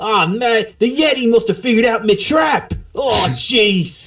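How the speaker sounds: put-on crude Australian accent. Describing a yeti hunter character whose trap failed, in a bad stereotypical australian accent. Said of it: "he has to have a very shitty stere- stereotypical Australian accent".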